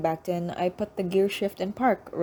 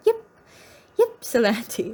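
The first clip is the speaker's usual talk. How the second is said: put-on swooping cartoonish man's character voice; 4 semitones higher, 3 dB louder than usual. Saying a place name like a cartoon guy, cartoon guy voice. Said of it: "like a cartoon guy".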